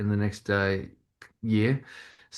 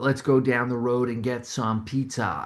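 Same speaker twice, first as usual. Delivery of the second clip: clumsy, really bad, slow fake American accent; 3 semitones higher than usual. Retelling walking around practising with a housemate: really bad American accent. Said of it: "and just really bad American accents".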